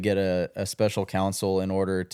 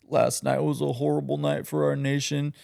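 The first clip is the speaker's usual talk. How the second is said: mock weepy, tearful voice; 7 semitones higher than usual. Imitating Jimmy Kimmel crying on national TV: mock tearful Jimmy Kimmel impression. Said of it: "he brings in his tears again".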